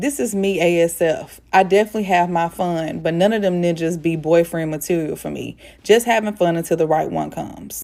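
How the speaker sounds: ordinary talk, nothing marked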